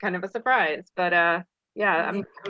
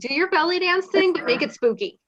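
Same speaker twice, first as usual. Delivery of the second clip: very high-pitched voice; 10 semitones higher, 4 dB louder than usual. Introducing a new act to the person who set the challenge, imitating Shiva. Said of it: "this is my impersonation of you".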